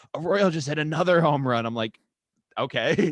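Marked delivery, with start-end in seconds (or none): 0.1-1.6 very loud, high, pumped-up hype, punching every part. Describing his brother watching baseball, mimic him, imitating pumped-up brother. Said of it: "he always gets so pumped".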